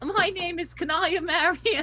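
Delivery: very high, slow, dainty feminine Cockney accent. Showing the best Cockney accent they can do: feminine Cockney Kanaya Mariam voice. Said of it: "feminine Cockney is the best I got".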